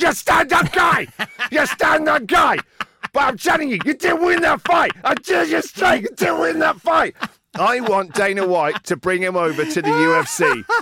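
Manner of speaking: shrill, very high, shouty ranting. Acting out Teddy Atlas confronting Horn on camera after the fight, in a shouty Teddy Atlas impression. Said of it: "I can't get enough of shouty Teddy Atlas".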